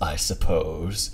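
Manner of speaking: very deep, hushed, soft character voice. Retelling what he said off camera, in Claude voice. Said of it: "in his Claude voice, he goes".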